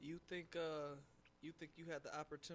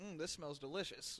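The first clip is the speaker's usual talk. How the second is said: usual speaking voice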